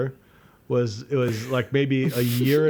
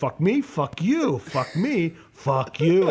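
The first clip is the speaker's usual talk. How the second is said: acted mild screaming outburst, each word dragged slowly; 4 semitones higher than usual. Retelling running after a man and screaming at him: imitating own screaming. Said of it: "screaming this".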